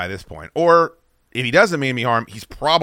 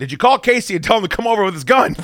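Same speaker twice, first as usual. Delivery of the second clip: high, raised put-on yell from afar; 9 semitones higher than usual. Retelling calling out to the wife holding the phone: imitating own past yell. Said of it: "I yell out".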